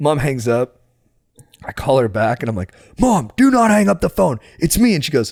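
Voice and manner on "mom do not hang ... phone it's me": put-on angry yell, pitched up. Retelling calling his mom back: imitating himself angrily yelling. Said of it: "You had to get angry".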